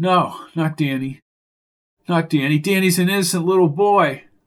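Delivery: ordinary delivery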